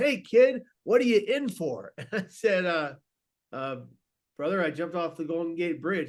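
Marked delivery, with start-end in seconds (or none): 0.0-1.9 hearty, jovial, raised, pitched-up voice. Recalling how a man first spoke to him: imitating a jovial tone. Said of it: "he looks at me in a very jovial way".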